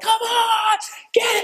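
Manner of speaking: very high, drawn-out rousing shout. Describing a buddy riding his bicycle around, retelling Lonnie Dyer's yell. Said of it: "he's yelling".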